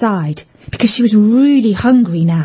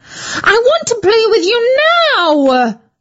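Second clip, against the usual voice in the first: very high, screeching shriek; 12 semitones higher than usual. Debbie, told to wait a minute, answers back, shrieking. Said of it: "shrieked Debbie".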